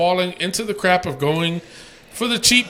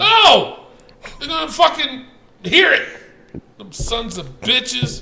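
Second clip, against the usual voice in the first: angry, heated outburst; 7 semitones higher than usual. After losing money, he insists they'll hear him, angry, heated. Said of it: "You sound angry too".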